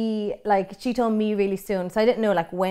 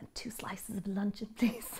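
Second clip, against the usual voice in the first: muttered under one's breath, quieter; 13 dB quieter than usual. Retelling ordering at the supermarket counter: muttering under my breath. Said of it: "kinda say under my breath".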